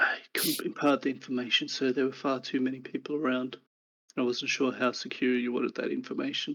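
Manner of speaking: speaking very quietly, hushed. Game master voicing a man who leans in to talk to g, speaking very quietly. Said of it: "leans in to talk to you very quietly".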